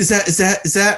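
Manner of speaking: excited, high, flustered, tripping-over-itself stammer. Retelling a woman at dinner who spots someone, imitating her flustered stutter. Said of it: "if you'd stop stuttering".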